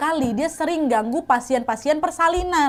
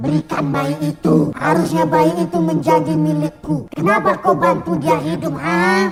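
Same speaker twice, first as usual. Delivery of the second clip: raspy, hoarse voice like a woman's; 3 dB louder than usual. Retelling what the husband said while turning to Chan, in a hoarse woman-like voice. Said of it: "Suaranya serak, Nat, kayak perempuan".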